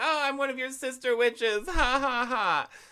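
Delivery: put-on very high, eager kid voice playing a witch. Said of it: "all into it".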